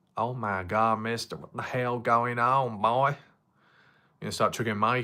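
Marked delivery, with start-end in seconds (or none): 0.1-3.0 put-on slow drawl, American Southern accent. Trying out a line in a put-on american southern accent. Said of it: "if it was a southern accent? American Southern".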